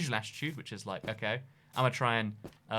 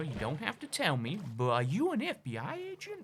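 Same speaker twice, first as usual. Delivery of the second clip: poor put-on American accent, soft and swooping; 4 semitones higher, 5 dB quieter than usual. Quoting the question Uber drivers keep asking them, in a bad American accent. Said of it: "that's my best American accent".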